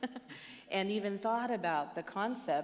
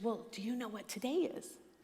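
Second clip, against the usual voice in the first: put-on whisper; 3 semitones higher than usual. Retelling his six-year-old daughter's phone call, imitating a whisper. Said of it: "I don't know why she's whispering".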